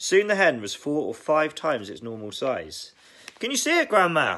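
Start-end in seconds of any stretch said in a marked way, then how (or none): 3.4-4.4 eager, high, excited shout. George calls out to his grandma as the hen grows, shouting. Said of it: "he shouted".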